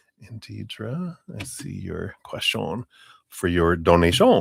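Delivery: bad, phony, overdone put-on French accent. Host answering a viewer's donation question, in a bad French accent. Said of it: "I don't know why I'm speaking with a bad French accent".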